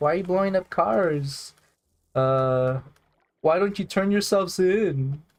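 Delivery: mock whiny, complaining kid voice, high and drawn-out. Retelling a kid's complaint in GTA about blowing up cars: imitating someone whining. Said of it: "he kept whining about it".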